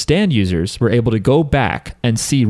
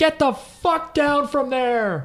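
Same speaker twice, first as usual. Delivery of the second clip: high-pitched, slow screaming yell. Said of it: "It's the one where he's like".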